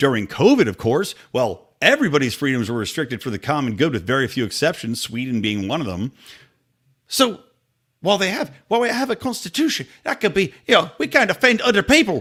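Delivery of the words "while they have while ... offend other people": put-on Irish accent, pitched up. Speaking to viewers about a government bill, briefly in an Irish accent. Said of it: "had to do the Irish accent".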